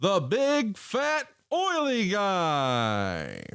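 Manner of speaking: very slow, swooping, stretched-out announcer call. Announcing a match on request, in one corner: Jeremy Borash announcer voice. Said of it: "your best Jeremy Borash".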